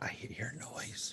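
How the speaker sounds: hushed whisper. Explaining how they warn others on hearing a noise in the mist, whisper. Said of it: "kind of a whisper".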